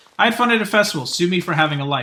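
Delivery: normal talking voice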